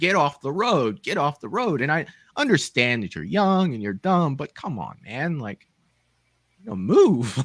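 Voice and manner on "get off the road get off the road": mock shouting, put-on yell. Recalling watching Texas Chainsaw, retelling yelling at the screen. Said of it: "I'm just yelling at the screen".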